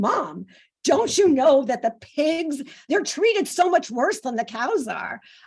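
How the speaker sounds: high, very exasperated, fed-up tone, acted. Mother retelling what her daughter said to her; imitating exasperated tone. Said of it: "in this very exasperated tone".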